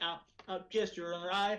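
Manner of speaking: stammering, faltering, halting, then giving in. Mocking the real Mark Zuckerberg: imitating Mark Zuckerberg. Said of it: "you see the fucking real Mark Zuckerberg, he's like".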